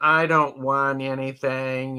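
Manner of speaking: slow, flat, apathetic, deflated meh voice.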